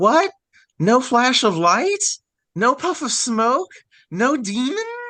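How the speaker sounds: squeaky, very high-pitched, slow put-on voice. Retelling how a man acted out the speaker's future reaction, high-pitched put-on voice. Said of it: "do this this high pitched voice".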